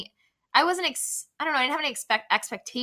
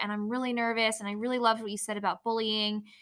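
normal talking voice

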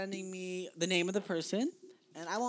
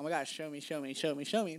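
ordinary talk, nothing marked

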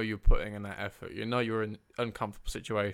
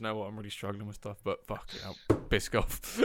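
put-on serious, stoic manner; 4 dB quieter than usual. Teasing the other speaker about donuts by imitating them: imitating someone going all serious and stoic. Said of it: "You went all serious, you know, stoic".

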